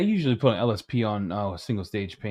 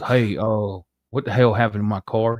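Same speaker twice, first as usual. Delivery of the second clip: put-on acted, tipsy drunk voice; 4 dB louder than usual. Retelling a midnight phone call about a car: imitating a drunk caller. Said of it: "Then he calls me drunk".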